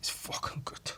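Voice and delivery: soft, unvoiced whisper.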